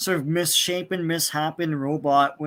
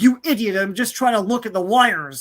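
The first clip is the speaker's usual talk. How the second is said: exasperated, super angry, furious yelling; 4 semitones higher, 4 dB louder than usual. Retelling a comic scene where superheroes fight: imitating angry yelling. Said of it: "so they get really super angry".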